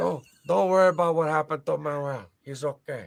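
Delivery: bad fake Portuguese accent. Doing a quoted line for the others, in the worst Portuguese accent ever. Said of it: "the worst Portuguese accent ever".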